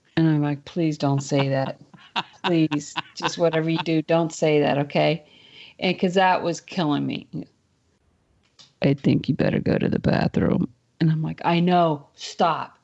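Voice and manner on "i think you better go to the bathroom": even, level, unchanging, toneless monotone drone. Retelling what he kept repeating to the speaker: flat monotone. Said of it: "he was very monotone".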